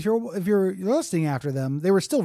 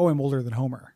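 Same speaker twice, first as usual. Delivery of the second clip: ordinary talk, nothing marked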